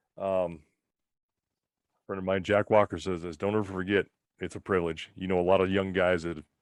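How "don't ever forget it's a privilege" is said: ordinary talk, nothing marked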